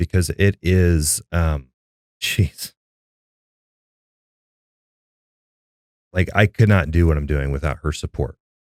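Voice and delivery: choked up, holding back tears. Asked by the host about a supportive spouse, holding back tears. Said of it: "borderline holding back tears".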